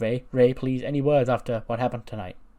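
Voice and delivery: loud calling out.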